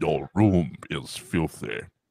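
very deep, low dark-lord voice. Trying out James Earl Jones with the Vader voice, in a Vader voice. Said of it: "James Earl Jones with the Vader voice?".

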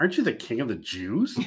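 kinda snide, needling, jabbing tone. Imagining how Pilate asked the question: snide Pilate voice. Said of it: "kinda snide".

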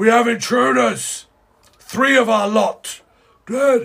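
very high, loud, drawn-out, commotion-filled shouting. Narrating what the listeners hear beyond the open doors: great shouting. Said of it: "you hear great shouting and commotion".

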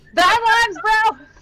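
yelling in character voice. Voicing a character who yells while hitting a monster: yelling in character. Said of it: "Alistair's just gonna yell".

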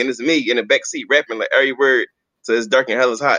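normal talking voice

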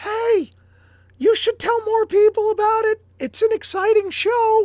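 high put-on falsetto. Acting out what a like tells the site: falsetto voice. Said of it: "He's talking in falsetto".

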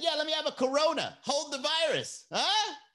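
very high, corny, jokey bar-guy voice. Speaker imitates a guy at the bar ordering a drink, imitating a guy trying to be funny. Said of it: "that guy is trying to be funny".

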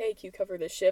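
normal talking voice

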